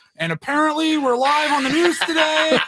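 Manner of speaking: put-on excited little kid voice. Retelling a viral video of a kid interviewed on the news: imitating the Apparently Kid. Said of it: "he just keeps saying".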